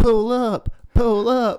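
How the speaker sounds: very high, very slow, drawn-out desperate urgent yell. Recounting when everyone was screaming: retelling a yell. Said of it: "And I was yelling".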